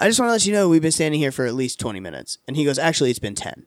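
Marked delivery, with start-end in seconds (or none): none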